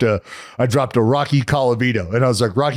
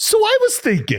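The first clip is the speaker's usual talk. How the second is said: mock very high, sly, knowing teasing tone. Retelling how a coworker turned his chair to start ribbing: imitating Feldy's knowing, about-to-tease tone. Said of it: "and just his tone".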